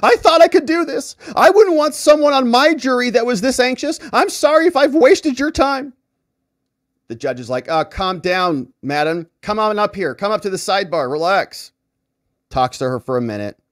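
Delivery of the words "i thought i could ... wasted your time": very high, loud, tearful sobbing. Retelling a woman in court breaking down over being anxious, imitating her sobbing. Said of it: "She's sobbing".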